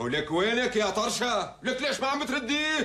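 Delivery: shouting. Back home, calling out for someone who won't answer, yelling. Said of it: "انت ليش عم تصرخ؟".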